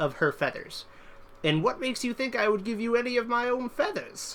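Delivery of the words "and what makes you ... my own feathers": shrill, high, grating bird-of-prey voice. Narrator reads the murder-hawk matriarch answering the man, shrill Mother Riptalon voice. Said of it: "They know of [name]? The progenitor of the murder hawks. / was the largest murder hawk the world had ever seen. / Yeah, [name] silenced them with a ruffle of her, / its voice a shrill cacophony that s".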